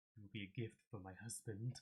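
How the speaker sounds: hushed, soft half-whisper, close to the ear. Narrator voicing a woman who half-whispers in a player's ear as she leaves: half-whispering in ear. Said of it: "she kind of whispers in your in your ear".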